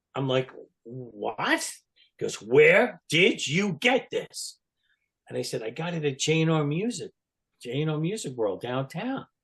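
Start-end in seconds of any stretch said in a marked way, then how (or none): 2.3-4.6 mock stern father voice, yelling, slow and pitched up. Retelling asking for an autograph and hearing Gene's reply: imitating Gene's stern yell. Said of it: "In a very stern, like my father yelling at me, voice".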